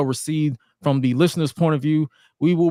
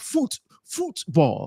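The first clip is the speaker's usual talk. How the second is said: poor put-on British accent, sing-song. Host introducing the show's football round-up, in a bad British accent. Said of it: "that's my bad uh, British accent".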